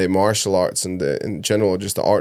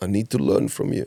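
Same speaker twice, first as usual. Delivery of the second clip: very strong put-on Russian accent. Retelling a film scene, quoting the village boss: very Russian accent. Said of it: "He had the very Russian accent".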